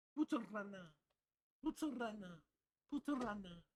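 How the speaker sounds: attempted French accent. Repeating a word to hear how it sounds, in an attempted French accent. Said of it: "How does this sound in French?".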